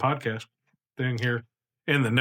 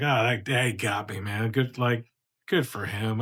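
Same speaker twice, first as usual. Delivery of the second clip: slow, mock amused, shrugging it off with laughter. Retelling being sold an old ticket, imitating laughing it off. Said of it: "laughing. Like, I was like".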